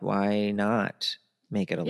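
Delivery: plain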